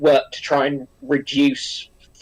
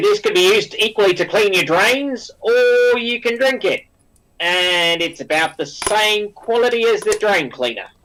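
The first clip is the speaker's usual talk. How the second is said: bad put-on Australian accent, higher pitch; 3 semitones higher than usual. Mocking how a wine might be described, you imitate a speaker in a bad australian accent. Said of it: "Apologies for the bad Australian accent".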